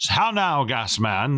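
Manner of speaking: slow, drawling, fake British accent. Describing a King of the Hill episode, speaker imitates the fair owner's fake British accent. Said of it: "he has like a British accent".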